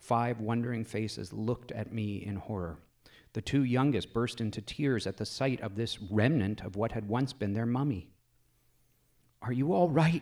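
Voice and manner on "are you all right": high, loud gasp seething with anger and relief. Narrator finds the five children alive and unhurt: gasped, angry and relieved. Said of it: "I gasped with a sudden seething mixture of anger and relief".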